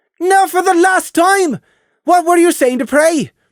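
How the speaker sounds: put-on very high, loud Irish-Scottish accent. Lilly demands to know what someone said to Prey, Irish/Scottish accent as Lilly. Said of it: "a Irish/Scottish accent was right for Lilly".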